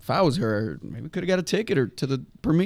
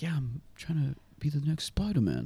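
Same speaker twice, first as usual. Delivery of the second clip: put-on British accent, quieter; 2 semitones higher, 6 dB quieter than usual. Retelling what someone said about becoming spider-man: imitating a british accent. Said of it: "In his British accent".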